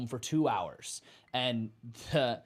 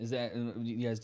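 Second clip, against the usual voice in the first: ordinary talk, nothing marked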